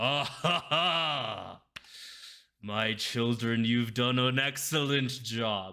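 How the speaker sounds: very slow, drawn-out, booming laugh in deep entity voice. Narrating to the players, the speaker gives Bane's words: booming Bane voice. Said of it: "you guys hear a booming voice".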